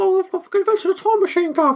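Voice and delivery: put-on East London accent. On a show, the host demonstrates how Wells talked: high East London accent. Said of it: "He talks a bit like this".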